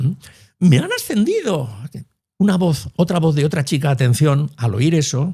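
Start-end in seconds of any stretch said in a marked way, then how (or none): 0.6-1.7 elated, very high burst of glee. Demonstrate how high tones convey joy, as a woman who has been promoted, in a happy high-pitched voice. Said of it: "los tonos altos siempre transmiten alegría".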